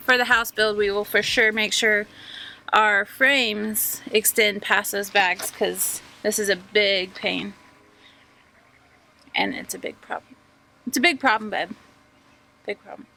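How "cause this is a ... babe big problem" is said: exasperated, fed-up, frustrated tone with swooping pitch. Explaining a building problem to a partner, frustrated. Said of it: "You sound awful frustrated".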